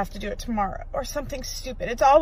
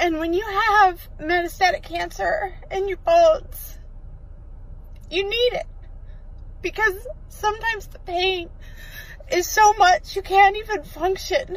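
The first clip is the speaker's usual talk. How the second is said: tearful, crying, high and slow voice; 8 semitones higher than usual. Leaving the pharmacy after a pain prescription problem, crying while talking. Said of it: "that's why I'm crying".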